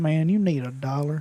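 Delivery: put-on strong, really country-sounding accent. Describing a man who walks up to people in the store, quoting him in a country accent. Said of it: "he talks really country".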